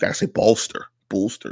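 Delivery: Pittsburgh pronunciation. Repeating the word he meant to say, in his Pittsburgh accent. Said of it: "that's my Pittsburgh accent".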